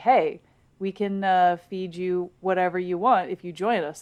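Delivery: normal talking voice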